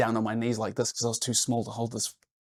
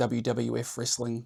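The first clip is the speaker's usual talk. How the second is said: plain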